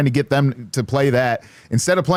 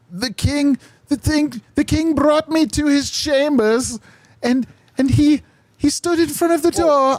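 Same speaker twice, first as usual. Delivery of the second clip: poor put-on woman's voice, higher pitched; 13 semitones higher than usual. Imitating how she would describe the king, bad impression of her. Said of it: "That's a very bad impression".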